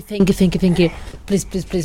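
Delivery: ordinary talk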